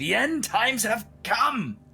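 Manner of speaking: very high scream building to a rising crescendo. Retelling a man's performance in front of a group, retelling a screamed crescendo. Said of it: "his voice is like rising to a crescendo, and he screams out".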